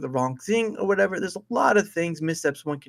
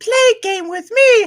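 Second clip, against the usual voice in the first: very high, very loud, slow squeaky puppet voice; 10 dB louder than usual. Trying the Elmo voice after the others joke about it: Elmo voice. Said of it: "Elmo says".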